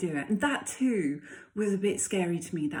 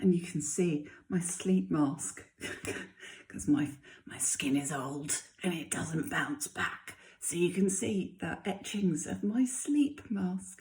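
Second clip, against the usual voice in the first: light, soft, hushed half-whisper. Early morning, the only person awake, talking to viewers while half-whispering a bit. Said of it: "I'm whispering a bit".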